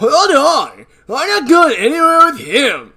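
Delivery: squealing high, slow and swooping. Reading a character's line aloud: alien prince from Fairly OddParents voice. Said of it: "I know what this voice is".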